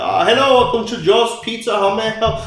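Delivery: very high, fake cheerful shop-counter phone voice. Retelling how scam calls get answered: pretending to answer as a pizza shop. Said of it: "I act like I'm".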